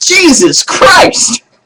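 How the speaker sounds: loud, very high, jolted startled shriek. Telling a church joke, a pricked husband jumps up: imitating a man screaming. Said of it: "he jumps up and screams".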